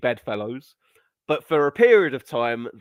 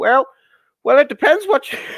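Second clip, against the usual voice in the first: shrill, very high, loud put-on voice; 8 dB louder than usual. Recalling a clip of Jordan Peterson, imitating his voice: Jordan Peterson voice. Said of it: "I can't do the voice".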